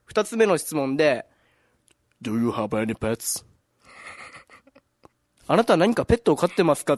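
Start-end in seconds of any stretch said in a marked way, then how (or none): 2.3-3.5 put-on really scary voice, much lower. Retelling an interviewer's second question in an interview, imitating a really scary voice. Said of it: "めっちゃ怖い声で言われて".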